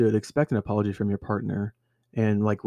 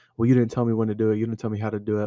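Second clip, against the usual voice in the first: usual speaking voice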